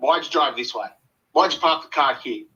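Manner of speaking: acted grumpy, narky, moody nitpicking tone. Retelling a partner's complaints in the car: imitating a narky moody tone. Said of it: "she was just sort of narky".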